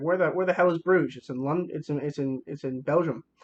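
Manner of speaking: ordinary talk, nothing marked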